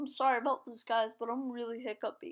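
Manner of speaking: normal talking voice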